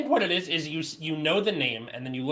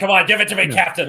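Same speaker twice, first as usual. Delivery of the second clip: put-on eager voice, higher and louder; 4 semitones higher, 11 dB louder than usual. Comparing another speaker to a dentist scene: Bill Murray impression. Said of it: "Bill Murray in Little Shop of Horrors".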